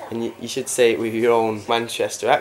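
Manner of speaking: normal talking voice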